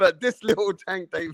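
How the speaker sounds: words caught in fits of laughing, choking. Predicting a boxing fight, the speaker breaks off mid-sentence, choking with laughter. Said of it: "I'm choking now because that made me laugh".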